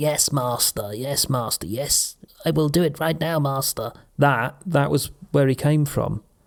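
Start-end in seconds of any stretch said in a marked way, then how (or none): 0.0-3.9 servile, groveling henchman-style voice. Explaining where a character's voice came from, doing a Renfield impression. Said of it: "he's sort of a bit like".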